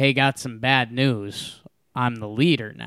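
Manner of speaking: ordinary talk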